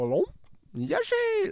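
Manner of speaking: squeaky, high-pitched call.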